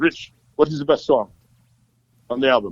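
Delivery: put-on Cuban accent. Retelling the record company president asking Rich a question: Jose Mendez with Cuban accent. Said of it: "he had that Cuban accent".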